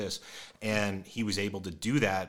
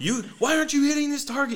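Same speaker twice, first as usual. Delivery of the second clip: mock yell, higher and louder; 10 dB louder than usual. Retelling how the other shooter yelled during a range session: imitating someone yelling. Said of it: "why are you yelling at me?".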